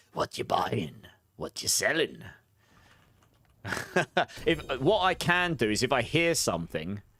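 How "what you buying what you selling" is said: put-on low, swooping shopkeeper sales-pitch voice. A viewer spotted the voice; streamer doing the merchant voice impression. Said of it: "did you just get the merchant voice".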